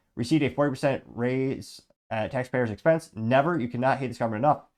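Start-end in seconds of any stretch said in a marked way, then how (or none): none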